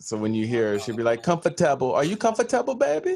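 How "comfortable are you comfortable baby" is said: put-on Trinidad accent. Imitating mom asking if someone is comfortable: imitating mom's strong Trinidadian accent. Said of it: "my mom has a strong accent".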